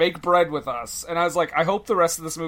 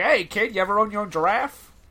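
put-on high, pitched-up, old-timey prospector voice; 5 semitones higher than usual. Joking about a movie scene, voicing Peter Griffin as an old-timey prospector. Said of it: "Peter Griffin, old-timey prospector".

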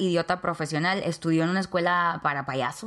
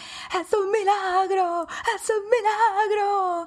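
very high, slow, sobbing crying shout; 14 semitones higher than usual. Retelling the girl's mother's reaction, imitating her crying and shouting. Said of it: "empieza a llorar y empieza a gritar".

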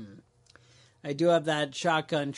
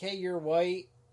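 ordinary talk

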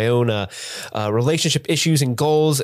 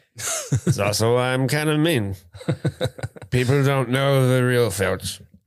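put-on drunken voice. Voicing Filch during a movie recap: drunken Filch voice. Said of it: "the more I do this voice".

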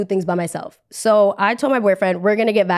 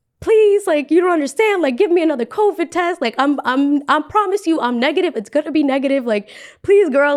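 play-acted crying, tearful, pleading voice; 6 semitones higher than usual. Retelling begging an official for another covid test: imitating own crying plea. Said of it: "So I started crying".

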